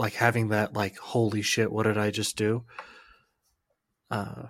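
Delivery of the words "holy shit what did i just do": normal talking voice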